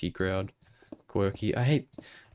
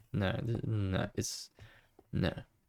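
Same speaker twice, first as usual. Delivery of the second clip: usual speaking voice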